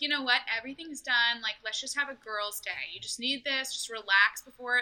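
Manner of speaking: ordinary talk, nothing marked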